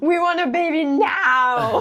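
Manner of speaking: very high, urgent, drawn-out screaming shout. Retelling how the whole body demanded a baby: imitating a screaming body. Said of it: "my whole body was screaming".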